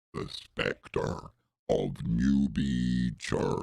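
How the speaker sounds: very low, eerie, spooky ghostly intoning. Presenting an old photo of a supposed ghost to listeners: ghostly voice. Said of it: "There's my ghostly voice".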